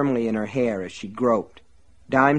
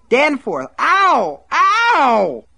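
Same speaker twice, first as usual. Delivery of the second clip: piercing, shrill, very high and very loud shriek; 8 dB louder than usual. Seized by the hair by Buster, she calls out, screaming. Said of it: "she screamed".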